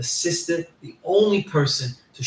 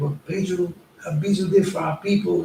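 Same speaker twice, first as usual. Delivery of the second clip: acted tearful crying voice, higher; 3 semitones higher than usual. Retelling what a young brother said: imitating someone crying. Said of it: "Starts crying, like".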